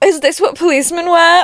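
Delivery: put-on quirky teen voice. Mimicking her own past line from an old video: imitating her quirky sixteen-year-old self. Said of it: "Me being like".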